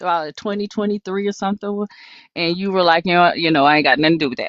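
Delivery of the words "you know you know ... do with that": put-on dismissive voice. Retelling what the other speaker once said: imitating a denying voice. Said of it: "in the voice of, like, denying".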